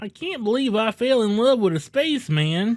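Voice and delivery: high cartoon frog puppet voice. Retelling a movie scene, voicing the woman's reply in a Kermit the Frog voice. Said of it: "Why'd you make her fucking Kermit the Frog?".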